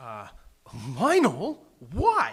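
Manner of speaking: startled, surprised tone. Script reading, the actor is told to deliver the line with surprise and question. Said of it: "deliver that line with surprise and question".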